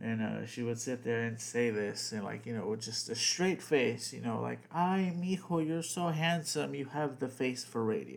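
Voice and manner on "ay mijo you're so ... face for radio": put-on sweet, loving, tender, doting voice. Speaker retells a woman's remark to him, imitating her sweet, loving voice. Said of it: "in such a sweet and loving voice".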